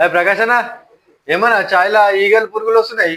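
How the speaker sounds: loud, public, complaining tone.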